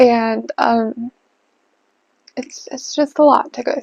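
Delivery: trying not to cry, holding back tears. Sharing a hard stretch of life with listeners, holding back tears. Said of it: "I'm not gonna cry".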